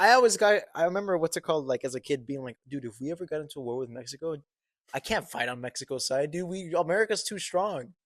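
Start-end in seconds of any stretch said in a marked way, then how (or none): none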